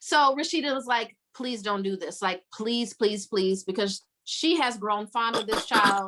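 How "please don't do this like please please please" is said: mock pleading tone, lower. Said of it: "She is begging and pleading her".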